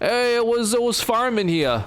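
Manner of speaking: best-attempt put-on New York accent, very high pitch. While playing a game, trying out an attempted New York accent. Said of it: "my best attempt at a New York accent".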